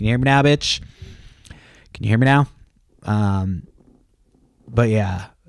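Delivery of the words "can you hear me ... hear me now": put-on commercial pitchman voice, higher. Retelling how his wife always hears him: imitating his wife as the Verizon guy. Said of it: "She's like the Verizon guy".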